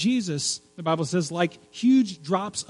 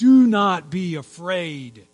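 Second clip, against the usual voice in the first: loud, determined, authoritative, commanding voice; 6 dB louder than usual. Speaker voicing god's words to listeners, in a determined, commanding voice. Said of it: "determined, authoritative, commanding voice".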